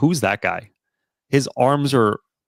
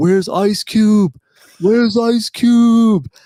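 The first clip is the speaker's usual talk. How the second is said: put-on drunken, shrill, high, loud shouting, one word stretched; 11 semitones higher, 6 dB louder than usual. Retelling being drunk on a street walled off for filming, retelling a drunk yell. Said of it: "I'm drunk, obviously. I'm just yelling".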